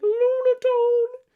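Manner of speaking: very high, very loud, shrill, weird screeching voice. Speaker comparing two characters from the anime, doing Lunatone's weird anime voice. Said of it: "he has like a weird voice".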